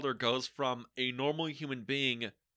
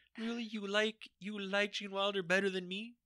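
put-on, high, sulky, mopey sad-boy pout; 7 semitones higher than usual. Voicing Jack Nicholson's imagined reaction to the ranking: put-on sad boy voice. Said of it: "that was just my sad boy impression".

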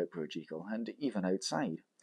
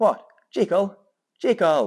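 very high, very loud crying out; 10 semitones higher, 11 dB louder than usual. Utterson sees dr. jekyll sitting at the window and calls to him; cried out. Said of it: "he cried".

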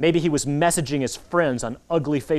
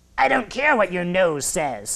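snarling, half-human, dog-like growl; 3 semitones higher than usual. Reading a story aloud, voicing a half-human, half-dog creature: snarling half-dog voice. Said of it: "snarled a half-human, half-dog voice".

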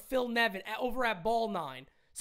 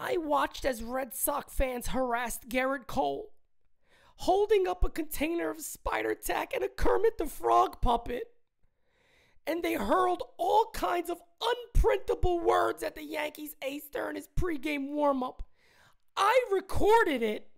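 play-acted, high, tearful, weepy crying voice; 5 semitones higher, 3 dB louder than usual. Read a tweet aloud the way you say its author wrote it, mock-crying as Brandon Cuddy. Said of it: "I'm going to read it like he wrote it. Okay, crying".

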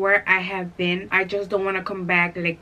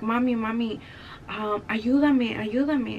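mock-tearful child's pleading voice; 3 semitones higher than usual. A mother retells her son waking up and calling her, imitating a child crying. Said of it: "started crying".

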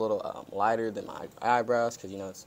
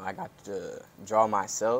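slow speech, voice breaking mid-phrase. Student telling the interviewer why drawing their avatar was their favorite: voice cracking. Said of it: "We're going to ignore that voice crack".

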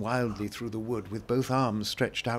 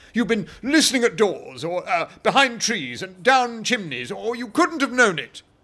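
very high, very loud, shrill burst of passion; 11 semitones higher, 10 dB louder than usual. Narrator reading a story, a character's reply to another character: in a sudden passion. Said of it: "breaking into a sudden passion".

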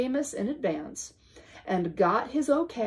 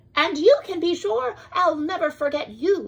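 high, squeaky little mouse voice; 7 semitones higher, 6 dB louder than usual. Reading a story aloud, voicing the mouse answering his whale friend: squeaky Amos mouse voice. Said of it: "[name], a mouse, ... the small voice, ... squeaked [name]".

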